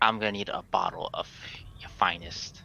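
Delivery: hushed whisper. A player's character leans over the counter toward the man, whispering. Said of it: "whisper to the man".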